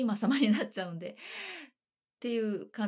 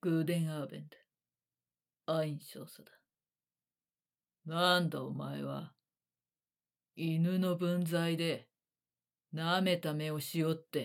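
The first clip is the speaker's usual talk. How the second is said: very low, deep voice in lowest register; 5 semitones lower than usual. Demonstrating how the role was first voiced, in the lowest possible voice. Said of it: "ぐらいの低い声だったんですよ".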